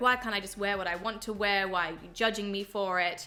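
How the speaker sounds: usual speaking voice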